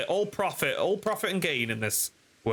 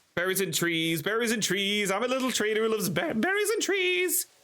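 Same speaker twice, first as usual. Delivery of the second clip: goofy, silly, high put-on character voice; 6 semitones higher than usual. Playing a game and doing a silly voice for a trader character: put-on funny voice. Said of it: "I had to do the voice".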